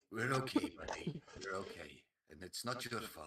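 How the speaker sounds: soothing, comforting, reassuring tone. A player's character pats a tearful companion on the back, comforting. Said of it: "As I pat Buddy on the back".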